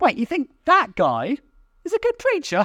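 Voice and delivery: mock snobbish, high, incredulous sneer.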